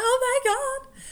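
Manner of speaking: high, loud, thrilled, excited scream. Recalling the end of a close game their team won, retelling a scream. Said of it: "I was screaming".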